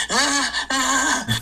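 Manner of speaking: put-on crying baby voice, high-pitched whine.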